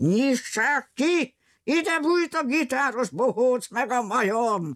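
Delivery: high, drawn-out roaring bellow. Narrator reads a pursuer pounding on the door, demanding it be opened; bellowing. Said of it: "bömbölte Rambilli".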